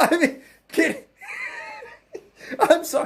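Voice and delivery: laughter while speaking. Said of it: "I'm laughing because".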